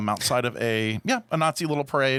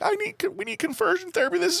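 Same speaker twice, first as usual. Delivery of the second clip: very high-pitched sobbing, crying voice. Retelling a mother's video about conversion therapy: imitating someone crying. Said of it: "crying, like".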